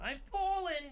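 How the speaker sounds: very high, put-on Boston accent. Imitating the woman from an old emergency-alert commercial: imitating a boston accent. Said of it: "she got, like, a Boston accent".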